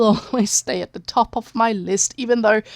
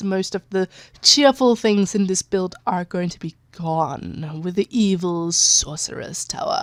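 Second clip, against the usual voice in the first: menacing, sinister storybook evil villain voice; 2 semitones lower than usual. Speaker describing a build, announcing the evil sorcerer's tower: mock evil voice. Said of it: "That was my evil voice".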